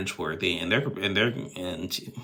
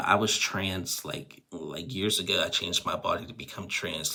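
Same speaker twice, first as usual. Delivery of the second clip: usual speaking voice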